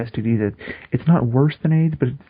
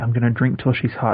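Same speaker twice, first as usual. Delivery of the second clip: ordinary talk, nothing marked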